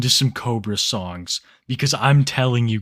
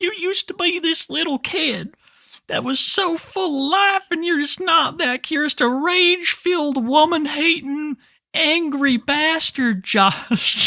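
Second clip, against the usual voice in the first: put-on very high-pitched, weepy, crying scolding. Retelling a father's plea to his son in an old video: imitating Clint crying, high-pitched. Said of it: "crying kinda like Josh did ... It was real high-pitched".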